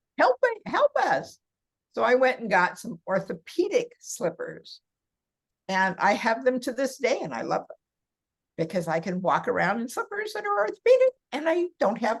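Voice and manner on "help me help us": much higher mock scream. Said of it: "my feet started screaming at me".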